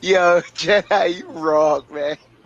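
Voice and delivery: talking through laughter. Reacting to an inside joke, laughing while talking. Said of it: "You the reason I'm laughing like this".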